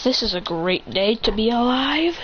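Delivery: ordinary delivery, nothing marked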